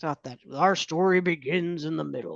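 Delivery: put-on old man narrator voice. Quoting the script's narrator while discussing the script: old man narrator voice. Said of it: "you do such a good job at the old man voices".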